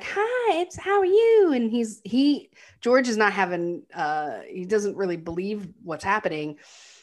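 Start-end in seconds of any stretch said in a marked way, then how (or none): 0.0-1.5 very high, slow Southern drawl. Retelling Dorothy greeting George at lunch: Dorothy's Southern accent. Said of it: "in her Southern accent get up and is like".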